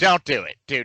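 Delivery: put-on loud hollering. Retelling watching a game scene, yelling at the TV. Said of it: "yelling at my T V".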